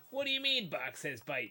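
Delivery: put-on Chicago accent. Retelling a commercial where a man keeps hearing a voice, Chicago guy voice. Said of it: "you doing Chicago guy voice".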